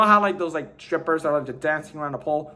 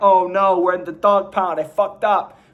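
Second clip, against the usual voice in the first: put-on sobbing, mock crying, louder; 4 dB louder than usual. Retelling a dog character's line while summarizing the plot: mock crying.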